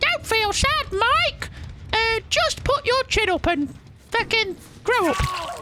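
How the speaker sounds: very high-pitched, slow, squeaky puppet voice. Recalling watching Elmo while feeling really sad, acting out his words to you in an Elmo voice. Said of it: "Is that an Elmo voice?".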